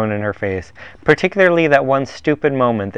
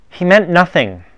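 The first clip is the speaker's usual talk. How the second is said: reassuring, a touch high in pitch; 6 semitones higher than usual. Reading Rosalind speaking to Dryden across the table, reassuring. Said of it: "Rosalind assured Dryden".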